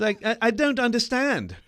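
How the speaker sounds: terrible, high put-on British accent. Speaker imitates a man from their story: terrible British accent. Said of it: "The terrible, terrible uh, British accent".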